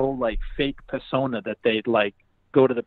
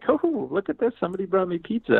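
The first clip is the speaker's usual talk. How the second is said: high-pitched, sing-song, giggly, fake cheerful delight; 7 semitones higher than usual. Complaining about people greeting a pizza delivery at the door, mocking a fake giggly voice. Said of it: "fake ass smile and this like kind of like a giggle".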